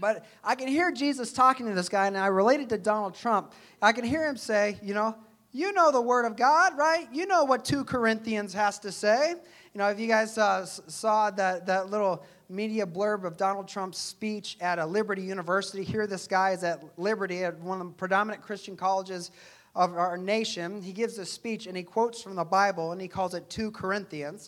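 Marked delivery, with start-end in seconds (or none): 5.5-9.3 sarcastic, louder, jabbing tone. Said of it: "I can actually sense a little sarcasm here".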